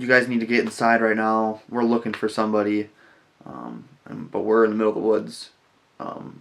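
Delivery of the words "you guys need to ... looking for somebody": ordinary talk, nothing marked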